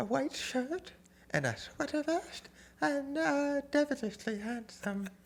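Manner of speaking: put-on prim, old, very high, soft Victorian maid voice. Retelling a secretary describing mr. murdoch on the phone; old victorian maid voice. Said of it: "I love how you're doing like old Victorian maid".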